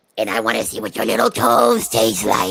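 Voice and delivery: ridiculous, very low, rough cartoon monster growl. Retelling a little sister talking through the door, in a cartoonish monster voice. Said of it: "her voice just changes to this really cartoonish, ridiculous monster voice".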